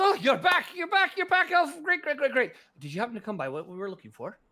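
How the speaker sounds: swooping, very high, very loud gnome chatter, swinging wildly. Voicing a gnome shopkeeper greeting returning customers: Tizik the gnome voice. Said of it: "Tizik opens the door and goes".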